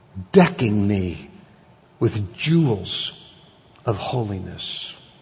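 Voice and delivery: slow, reverent, drawn-out reading with long pauses between phrases.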